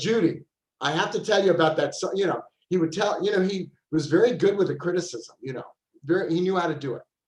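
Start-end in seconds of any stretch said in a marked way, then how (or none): 0.0-2.1 put-on New York accent. Retelling how Richard talked to Judy: imitating Richard's New York accent. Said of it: "he had a New York accent, and he'd go".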